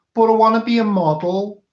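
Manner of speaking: put-on very high, loud Liverpool Scouse accent. Quoting a Brookside character after saying they can't do Scouse: Scouse accent, Brookside line. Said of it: "I can't do Scouse".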